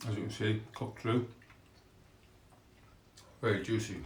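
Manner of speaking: speaking with mouth full of food, chewing. Tasting a cooked breast piece and describing it, talking with mouth full. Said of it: "I'm sorry for speaking with my mouth full".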